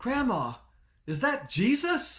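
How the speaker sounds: put-on acted, loud, very high, swooping child's shout. Retelling calling out to grandma during a baptism, retelling a loud kid yell. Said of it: "in a loud kid voice, I yelled out".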